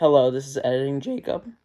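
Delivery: voice breaking and cracking. Introducing oneself at the start of a YouTube video, voice cracking. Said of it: "my voice cracked".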